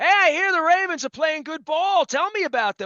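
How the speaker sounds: put-on New England accent. Imitating the other speaker's father calling from Mars: imitating a New England accent. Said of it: "called me in his great New England accent".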